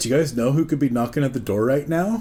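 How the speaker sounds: plain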